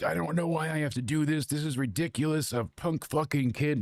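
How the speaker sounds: furious, indignant, angry complaining grumbling. Retelling a wrestler complaining while filming an apology: imitating the Ultimate Warrior angry. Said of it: "he is so angry".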